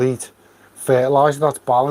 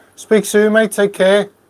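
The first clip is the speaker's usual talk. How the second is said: high, carrying shout, as if far away; 7 semitones higher, 4 dB louder than usual. Saying goodbye to a mate as if they were off in the distance, shouting. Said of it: "I don't know why I'm shouting at you".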